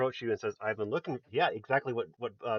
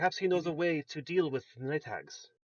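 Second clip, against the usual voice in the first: put-on woman's voice, higher pitch; 5 semitones higher than usual. Voicing Irina asking Joseph to escort her to the church: Irina's voice. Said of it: "Irina says".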